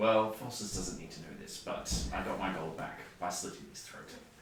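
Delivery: hushed, secretive whispered voice. Leaning in to tell another character a secret in character: whispering. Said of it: "It was a whisper".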